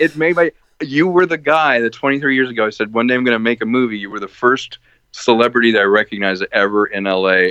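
ordinary talk

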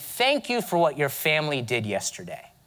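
mocking, sarcastic, jabbing tone. Retelling a friend's remark in class after the attacks: imitating a sarcastic remark. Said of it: "he sort of sarcastically said to me".

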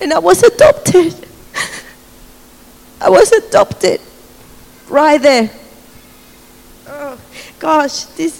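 tearful, overcome with feeling, near tears. Sharing a personal testimony and apologizing for being emotional, near tears. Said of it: "sorry to be so emotional".

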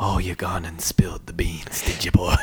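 eerie, low, slow voice echoing from everywhere. Retelling a movie line to others, imitating an omnipresent echoing voice. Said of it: "this omnipresent voice of".

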